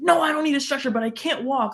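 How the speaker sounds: mock worked-up, frantic, super agitated voice. Recounting a knocked-out fighter answering about a stretcher: mock super agitated. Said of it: "like super super agitated".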